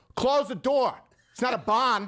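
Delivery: put-on drawn-out, high, slow Maine accent. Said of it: "he didn't have the rest of the Maine accent".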